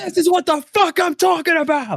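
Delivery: very high, raging, crashing-out outburst. Retelling the own reaction when a hit doesn't land: retelling a raging outburst. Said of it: "Just the rage".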